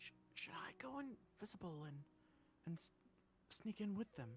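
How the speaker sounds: hushed, halting, stumbling whisper. Voicing a character who leans over to ask another something: whispering. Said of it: "leans over to Audra and whispers".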